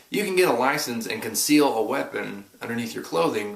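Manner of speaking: normal talking voice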